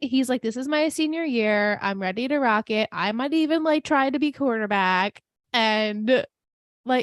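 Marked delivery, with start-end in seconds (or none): none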